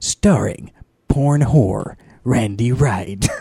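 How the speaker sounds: booming movie-trailer voiceover announcer voice. Performing a joke porn movie trailer on request: movie trailer voiceover voice. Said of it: "I'm gonna do a movie voiceover for a porno".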